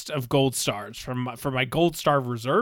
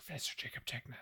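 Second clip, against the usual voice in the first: whisper, much quieter; 21 dB quieter than usual. Suggesting to another speaker how to start the reading, whispering. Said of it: "You're going to whisper".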